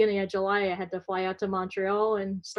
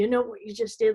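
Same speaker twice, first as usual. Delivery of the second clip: angry, accusing acted-out voice. Retelling the dad's question at the laptop: imitating an angry dad. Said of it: "all, like, angry".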